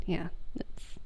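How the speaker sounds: soft whispered aside.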